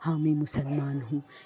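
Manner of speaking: voice of a big grown adult man. Retelling a child's answer that came in a changed voice: imitating a grown man's voice. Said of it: "उसकी आवाज़ बहुत बड़े आदमियों वाली हो गई".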